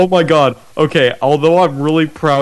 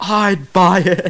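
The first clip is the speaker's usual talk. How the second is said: blurted out, pitched-up scream; 6 semitones higher than usual. Retelling a sales-pitch game after the group refused to buy: retelling a scream. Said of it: "And I just screamed".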